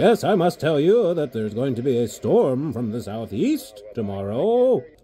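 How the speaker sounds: put-on stately, slow old-time newscaster voice, announcer style. Watching a TV station, showing how newscasters used to talk: old-style newscaster voice. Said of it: "I wish newscasters talk like this".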